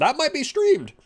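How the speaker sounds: voice breaks, cracking very high. Streamer still deciding whether to stream modded Pikmin, voice cracking. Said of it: "Voice crack".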